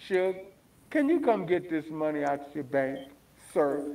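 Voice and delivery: acted-out, overly polite, courteous, careful, respectful tone. Retelling how the bank asked Suge Knight to withdraw his money: imitating a polite request. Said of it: "They were saying polite to him".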